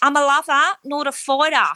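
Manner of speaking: bad put-on Australian accent. Speaker quotes what Haley said, in a bad Australian accent. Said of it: "Excuse my bad Australian accent".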